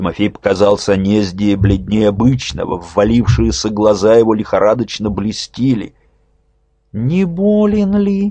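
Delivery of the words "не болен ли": very high, tender, gentle, solicitous, caring voice. The posadnik, fingering his beads, speaks to Timofey: gentle caring concern. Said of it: "с ласковой заботливостью спросил посадник".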